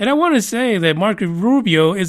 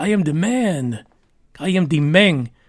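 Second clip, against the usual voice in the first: put-on Spanish accent; 4 semitones lower than usual. Retelling what a man told a TMZ photographer: put-on Spanish accent. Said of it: "I got to give him that Spanish accent".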